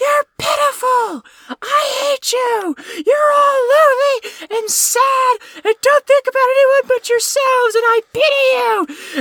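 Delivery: very high, loud, screaming rant at full volume. Describing a movie scene where she walks away and screams, imitating a screaming rant. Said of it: "starts screaming at the top of her lungs".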